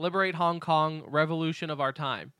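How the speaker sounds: normal talking voice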